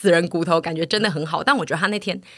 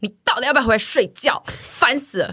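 loud, high-pitched, exasperated yell; 5 semitones higher than usual. Telling a story about being kept awake at night, retelling own loud yell. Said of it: "我就很大声喊说".

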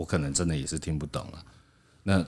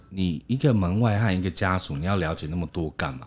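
normal talking voice

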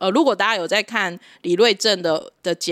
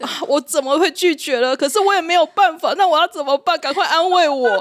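put-on wailing, much higher pitch; 9 semitones higher, 4 dB louder than usual. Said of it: "在群组里面跟我们哀嚎很久".

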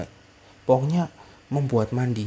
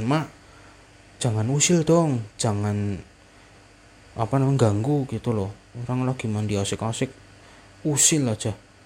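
ordinary delivery

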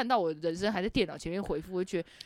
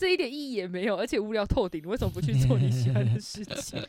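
ordinary talk

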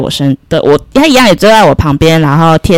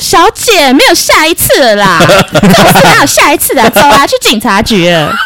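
high, put-on, furious scolding voice; 6 semitones higher than usual. Retelling what the station attendant said: imitating an angry station attendant. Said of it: "他非常生气地说".

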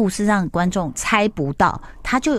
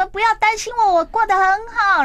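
mock, very high, high-pitched shout; 14 semitones higher than usual. Retelling how a man ran outside on his break and shouted at the sky, retelling a shout. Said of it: "对着天空大喊说".

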